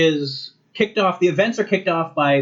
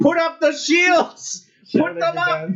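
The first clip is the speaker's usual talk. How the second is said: put-on very high-pitched urgent shout; 12 semitones higher than usual. Describing Spock in the show with a giant earpiece, retelling Spock shouting orders. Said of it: "and he's shouting".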